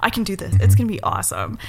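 normal talking voice

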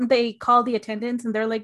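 plain

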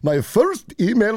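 put-on, cartoonish shopkeeper-style Indian accent. Recalling the Simpsons episode where he becomes a citizen, doing an Apu impersonation. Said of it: "my best Apu impersonation".

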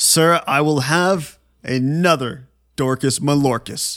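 bold, proud, self-assured, chest-out delivery. Standing up and addressing a man, acting proud and confident. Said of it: "I say it with my chest. Say it proudly".

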